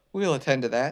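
ordinary delivery, nothing marked

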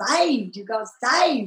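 put-on Southern accent on "saved". Retelling what people said after being saved: Southern accent on 'saved'. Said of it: "in their southern accent".

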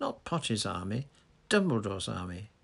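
ordinary delivery

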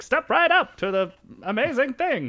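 put-on very high, loud, old-fashioned fairground barker voice. Describing their idea of a World's Fair, in an old-timey voice. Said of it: "your old timey voice".

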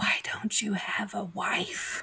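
loud stage whisper, easily overheard. Retelling what she whispered in his ear, retelling a whisper. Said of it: "whispers in his ear".

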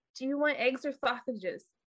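small, tiny, high-pitched lisping voice. Voicing a character who sidles over to sit next to you, tiny lisping voice. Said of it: "she kind of lisps in a little, her tiny little voice".

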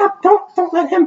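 frantic, panicked, very high cry. Speaker retells grandma reacting to his playing, imitating a panicked shout. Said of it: "And she's actually freaking out".

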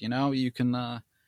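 put-on touch of New Orleans accent. Retelling a phone call with Mr. Rick, imitating Mr. Rick's New Orleans accent. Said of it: "his little New Orleans accent".

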